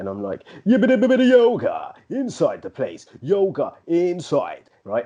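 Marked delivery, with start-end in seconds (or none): 0.7-4.7 put-on high, swooping, old-school garage MC flow. Telling his missus he looks forward to home yoga, in an old-school garage MC voice. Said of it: "I do it with the MC voice".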